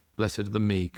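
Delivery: ordinary talk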